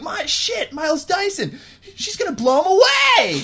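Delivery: very high, loud yell with voice cracking. Imitating an actor's line from Terminator two: imitating Edward Furlong's cracking voice. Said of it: "his voice would randomly crack".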